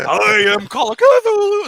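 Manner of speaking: voice breaking, very high and very loud. Joking about the ancient ones before puberty, the speaker's voice cracking. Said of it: "my voice cracked there".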